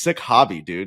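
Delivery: mock mutter under the breath. Retelling what a golf partner said getting into the car: imitating Barzy muttering under his breath. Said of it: "under his breath goes".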